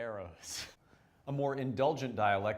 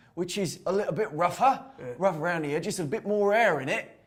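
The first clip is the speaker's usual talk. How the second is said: very loud, rough-edged country Cockney accent; 7 semitones higher, 9 dB louder than usual. Explaining variations of the Cockney accent, in a rougher rural Cockney accent. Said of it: "a more rural Cockney accent".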